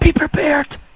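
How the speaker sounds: hushed, tense whisper. Warning a companion in character from fifty feet away: battle whisper. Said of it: "Battle whisper".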